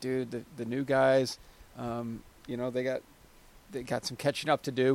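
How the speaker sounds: ordinary talk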